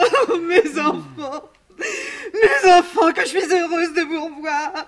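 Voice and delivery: tearful, sobbing, high and loud crying. A mother greets her children again after time apart, crying. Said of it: "Ne pleure pas, maman".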